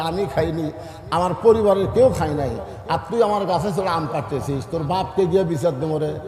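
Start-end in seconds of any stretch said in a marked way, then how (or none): none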